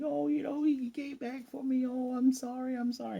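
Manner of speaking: very high, tearful, crying blabbering. Retelling a spy story, acting out the crying woman blabbering. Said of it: "she's like kind of blab- blabbering".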